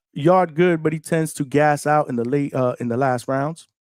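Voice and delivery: normal talking voice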